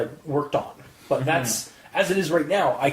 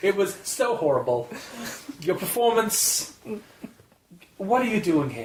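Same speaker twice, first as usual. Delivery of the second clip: brutally harsh, blunt delivery, pitched up; 5 semitones higher than usual. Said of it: "Do the rest of your final thoughts in his accent".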